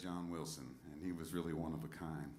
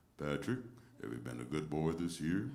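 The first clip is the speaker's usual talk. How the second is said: put-on baritone voice, louder; 4 dB louder than usual. Guessing how a man would do Santa on the phone for Patrick, Santa voice. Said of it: "I'm guessing he'd do something like".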